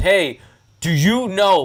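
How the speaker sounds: put-on snippy attitude voice. Retelling a member's question from behind on the fairway: imitating someone with an attitude. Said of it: "with an attitude".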